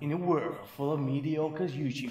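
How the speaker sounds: soft, dramatic, epic movie-trailer announcer voice. Joking with a co-speaker, doing the movie trailer voice. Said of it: "I could do the movie trailer voice".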